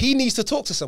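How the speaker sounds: high, loud, impassioned outburst.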